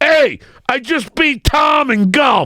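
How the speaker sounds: very high, slow, drawn-out bragging gloating yell. Speaker retells calling out to his golf opponent's buddies after winning: retelling a scream. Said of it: "I'm screaming out to all his buddies".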